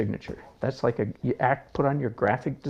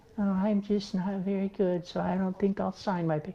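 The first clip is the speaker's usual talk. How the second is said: high-pitched mocking voice sounding unsure of itself; 7 semitones higher, 5 dB quieter than usual. Ranting about painters who doubt themselves: mocking imitation of a self-doubting painter. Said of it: "I hope I'm mocking the heck out of somebody".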